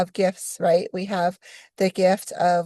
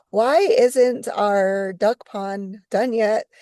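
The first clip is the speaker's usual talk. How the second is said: normal talking voice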